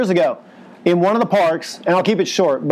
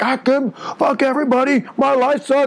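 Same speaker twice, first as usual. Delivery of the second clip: furious, raging, enraged outburst, pitched up; 6 semitones higher than usual. Retelling a man's outburst after his girl slept with another man: imitating a raging man. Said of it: "this guy is just fucking raged out".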